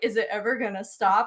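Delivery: acted whispering voice. Retelling what someone whispered about a long-running alarm: imitating a whisper. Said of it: "whispered to me".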